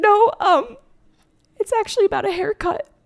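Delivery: play-acted very high, tearful, choked-up crying voice. Recounting answering a man who asked if they were okay; retelling choked-up crying. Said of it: "when you're crying and you can't speak".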